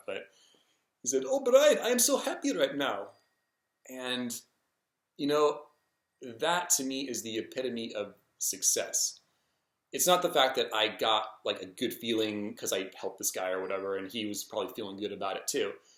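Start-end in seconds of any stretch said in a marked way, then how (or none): 1.3-3.1 bad Indian accent, very high and swooping. Retelling what a man he helped said as they parted, in a bad indian accent. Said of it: "I know it's like the worst Indian accent".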